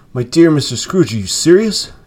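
astonished, out of breath. A gentleman responds after scrooge whispers in his ear: breathless astonishment. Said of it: "as if his breath were taken away".

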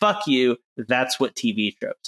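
ordinary talk

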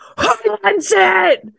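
high, slow raging growl. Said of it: "and he says".

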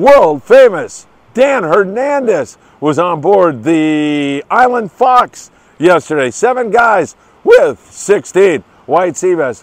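thrilled and excited, voice starting to crack. Fishing report host announcing a boat's catch, voice cracking with excitement. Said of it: "my voice is starting to crack".

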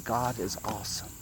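very soft, quiet half-whisper. Leading the group to say it all together, in a quiet half-whisper. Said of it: "in a quiet whisper".

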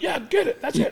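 put-on shrill, very high cheering yell. Speaker acts out his wife yelling during a volleyball game, retelling a yell. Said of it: "She's yelling at him like".

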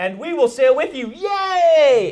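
high, loud mock cheering.

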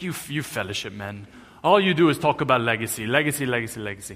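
put-on Romanian-accented English, best attempt. Retelling what a friend said while laughing at you, in a Romanian accent. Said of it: "That's my best Romanian accent".

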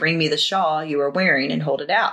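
normal talking voice

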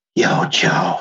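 acted-out whisper. Recapping a movie's final moment where a character speaks, retelling a whisper.

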